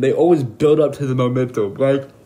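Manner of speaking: words spoken through a yawn. Giving advice on making interesting videos, the speaker talks while yawning. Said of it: "sorry, yawning".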